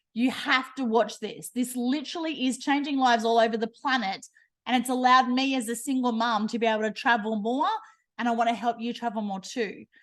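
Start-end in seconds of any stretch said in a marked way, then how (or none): none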